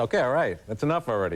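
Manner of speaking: ordinary talk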